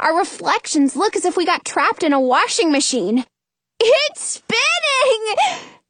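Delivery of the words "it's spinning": shrill, very high squealing cry. Narrator reads a character reacting to the spinning mirror, squealing. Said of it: "Jonah squeals".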